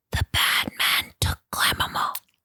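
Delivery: close, breathy whisper. Acting out a child whispering into someone's ear: retelling a whisper. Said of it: "he whispers in Fergus's ear".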